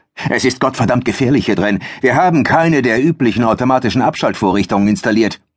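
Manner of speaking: rushed, bossy scolding tone. Narrator reading Mark warning Nigel about the danger on the platform, shouting. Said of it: "Mark war eindeutig der Boss auf dieser Plattform".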